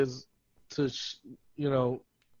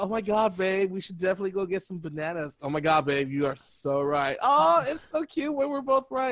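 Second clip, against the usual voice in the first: mocking sweet, happy talk, pitched higher; 4 semitones higher than usual. Retelling what a couple in the grocery store says: imitating a happy couple. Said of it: "all these happy fuckers just like".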